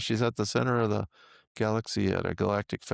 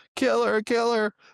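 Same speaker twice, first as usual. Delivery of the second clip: play-acted, shrill, very high, loud screaming cry; 14 semitones higher, 5 dB louder than usual. Retelling a dream where a woman in the courtroom yells: imitating someone yelling.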